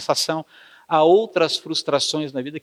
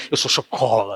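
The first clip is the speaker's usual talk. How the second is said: put-on full-mouth voice, much lower and slower; 6 semitones lower than usual. Acting out a chocoholic admitting it, mimicking talking with a full mouth. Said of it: "fala com a boca cheia".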